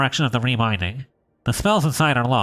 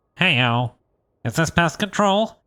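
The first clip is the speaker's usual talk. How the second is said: geeky nerdy voice, higher pitch; 4 semitones higher than usual. Voicing a bookbinder behind a door in a game: nerdy voice. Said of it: "give this guy a nerdy voice".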